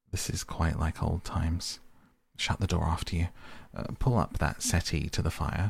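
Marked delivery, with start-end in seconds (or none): none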